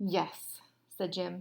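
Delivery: plain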